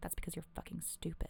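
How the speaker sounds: muttering under breath. Recounting a girl's jab at a classmate during class: muttering under her breath. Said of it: "like under her breath".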